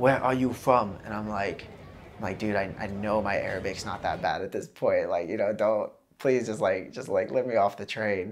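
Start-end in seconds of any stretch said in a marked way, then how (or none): 0.0-1.0 mock very broken English, higher. Recounting a man blocking the train door, imitating really broken English. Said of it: "in really broken English".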